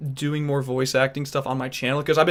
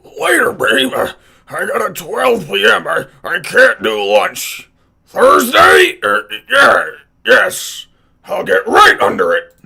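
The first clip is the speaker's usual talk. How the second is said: put-on very loud, slow, drawn-out, creaky old man voice; 6 semitones higher, 11 dB louder than usual. Imitating a clip right after it plays: Wilbur Cobb impression. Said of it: "I've been trying to imitate Wilbur Cobb".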